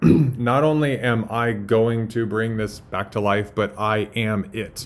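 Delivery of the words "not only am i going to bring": ordinary delivery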